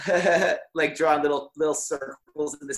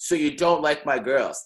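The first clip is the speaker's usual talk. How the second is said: imitated confrontational, challenging male voice. Retelling what a guy asked him at seventeen, mock-confrontational. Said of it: "he's like being like confrontational".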